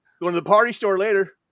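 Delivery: laid-on Michigan accent. Doing Michigan lingo for the others: put-on Michigan lingo. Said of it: "I'm doing the Michigan lingo now".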